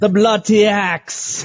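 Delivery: poor put-on English accent, very high pitched. Saying the phrase the way English people would: bad English accent. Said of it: "I don't do the best English accent".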